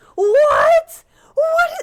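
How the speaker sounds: shouting. Calling out to a woman playing on her phone during a recording: yelling. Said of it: "Sorry, I'm yelling into the".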